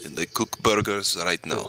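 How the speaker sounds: put-on Russian accent. After trying Romanian, speak as someone cooking burgers, in a put-on Russian accent. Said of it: "sound like like a get bigot, but more more like Russian".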